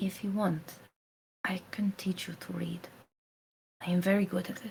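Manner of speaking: hushed, private tone. Retelling a character speaking so only Mojave can hear, lowered voice. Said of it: "she like lowers her voice".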